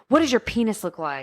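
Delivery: blunt, demanding mild yell. Retelling a character confronting an actor at his car: imitating someone yelling. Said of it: "yelling at him".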